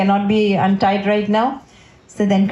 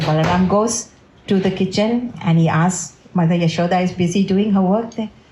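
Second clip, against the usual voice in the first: plain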